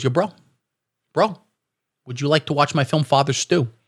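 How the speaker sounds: put-on tough bro voice. Imagining what a celebrity says to an intruder: Mark Wahlberg impression. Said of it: "he goes".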